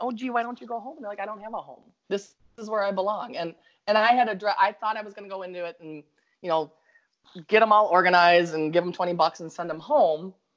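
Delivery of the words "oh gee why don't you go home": put-on Minnesota accent, higher pitch. Speaker retelling chatting to the figures in the car, Minnesota accent. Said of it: "I'm yabbering at them with my Minnesota accent".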